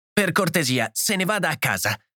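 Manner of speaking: abrupt, sudden, high-pitched outburst. A mother rocking her screaming hurt child turns on another woman, in a sudden outburst. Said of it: "proruppe d'improvviso".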